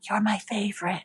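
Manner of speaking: mock quiet whisper. Retelling touching a tree and whispering to it: whispering to a tree. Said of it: "I touch the tree and I whisper".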